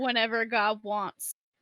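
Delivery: ordinary delivery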